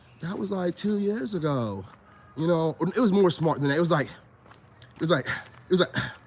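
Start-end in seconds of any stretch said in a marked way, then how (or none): 0.2-1.8 dismissive, offhand, couldn't-care-less delivery. Retelling what a woman said to them, the speaker imitates her flat monotone. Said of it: "plus her monotone tone".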